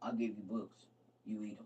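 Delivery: very deep, very soft, hushed big-man voice. Retelling what he'd say when you got in trouble, imitating a deep big-man voice. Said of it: "he got this real deep voice, real big man".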